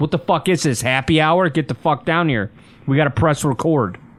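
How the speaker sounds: usual speaking voice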